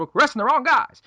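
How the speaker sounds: put-on very high-pitched, old-fashioned 1940s-style voice. Retelling what a man said about arresting the wrong guys: 1940s-style voice. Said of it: "in his like forties voice, like how all people talk in the forties".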